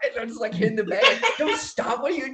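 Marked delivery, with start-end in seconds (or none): 1.4-2.4 high-pitched urging, egging-on yell. Describing punching the bag, the speaker quotes what they yell at themselves: retelling yelling at themselves. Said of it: "I'm yelling at myself".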